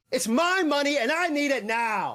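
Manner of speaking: put-on screaming commercial voice. Repeating a commercial line just described: imitating J G Wentworth commercial guy screaming. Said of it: "the guy in those J G Wentworth commercials who screams".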